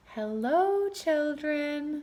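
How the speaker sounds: sugary, sweet, high-pitched voice. Greeting the children after footsteps in the hall, in a sweet voice. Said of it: "said someone in a sweet voice".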